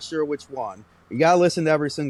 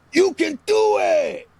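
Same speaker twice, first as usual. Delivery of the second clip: shrill cheer, very high, loud and drawn out; 6 dB louder than usual. Doing an impression of Uncle Hector imitating Rob Schneider cheering up a friend: Rob Schneider "You can do it!" impression. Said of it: "my impression of Uncle Hector doing an impression of Rob Schneider".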